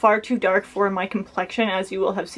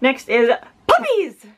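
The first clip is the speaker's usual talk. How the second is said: loud exclamation, pitched higher; 4 semitones higher than usual. Reading out a product name with three exclamation marks: shouting the name loudly. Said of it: "I'm so sorry if you're wearing headphones".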